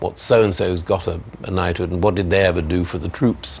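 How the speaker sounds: plain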